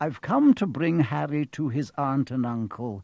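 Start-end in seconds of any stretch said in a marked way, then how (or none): none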